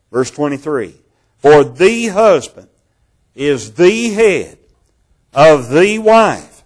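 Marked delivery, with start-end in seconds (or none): 1.3-6.3 every "the" stressed hard. Reading a bible verse aloud, with stress on each "the". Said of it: "I want to put emphasis upon the word "the."".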